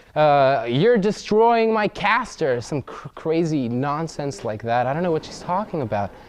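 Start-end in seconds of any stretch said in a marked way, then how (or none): 0.7-2.4 mock, very high shrieked screaming. Retelling a phone call where the caller is screaming: imitating someone screaming. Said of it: "she's screaming".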